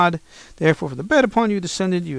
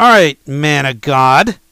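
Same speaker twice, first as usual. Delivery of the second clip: haughty, arrogant, very loud voice; 10 dB louder than usual. Retelling the captain ordering the man of God to come down: mock-arrogant. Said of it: "saying it in such an arrogant way".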